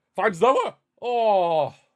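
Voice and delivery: excited voice cracking, shrill, high-pitched and very loud. Narrating a corner kick, the speaker's voice cracks with excitement. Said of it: "apologies for the voice crack".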